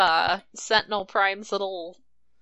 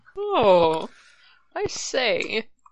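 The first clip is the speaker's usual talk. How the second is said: posh, grand, swooping sing-song voice; 2 semitones higher than usual. Quoting a cartoon character's line after discussing his impression: posh Trax voice. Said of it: "So posh".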